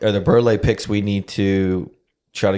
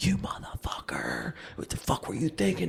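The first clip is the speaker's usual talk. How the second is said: mock stone-cold, dead-serious whisper; 7 semitones higher, 14 dB quieter than usual. Retelling how a friend scolded the others: imitating Jacob dead serious. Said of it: "dead serious".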